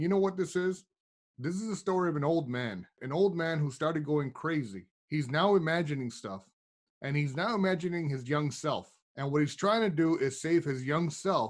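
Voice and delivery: ordinary talk, nothing marked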